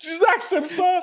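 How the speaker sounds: excited cheering.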